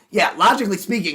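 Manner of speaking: loud, forceful pundit voice. Mocking how Ben Shapiro talks: Ben Shapiro impression. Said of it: "'cause Ben Shapiro's just like".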